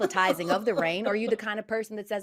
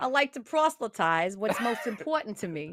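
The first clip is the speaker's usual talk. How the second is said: put-on Boston accent. Repeating a line on request, Boston accent. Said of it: "Now do T I but with a Boston accent".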